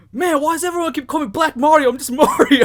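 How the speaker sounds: very loud, high-pitched, upset griping. Retelling what a man kept saying on the phone, imitating someone upset. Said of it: "like kind of upset".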